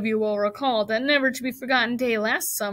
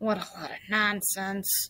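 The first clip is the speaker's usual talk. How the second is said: mumbled, muttered under the breath; 3 semitones lower, 7 dB quieter than usual. The rat, crouched under the straw at the bottom of the crate, mutters. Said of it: "muttered the rat".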